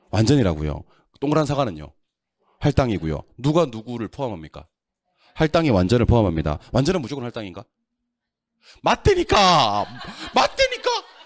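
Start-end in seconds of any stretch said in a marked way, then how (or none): 8.8-10.9 shrill, very high, swooping shout. Lecturer drilling students on a point to memorize, shouting. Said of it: "소리 질러서 미안합니다".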